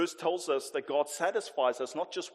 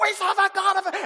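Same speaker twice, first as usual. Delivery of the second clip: put-on young boy's shout, much higher; 9 dB louder than usual. Retell a young boy's reply in a shouting match with you, imitating a young boy shouting back. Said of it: "He would shout back".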